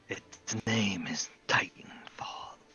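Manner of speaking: rasping male voice. Storyteller voicing a male character's words to the listeners, in a raspy voice. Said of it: "in a raspy voice".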